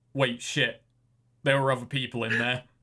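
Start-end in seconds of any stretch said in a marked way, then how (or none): none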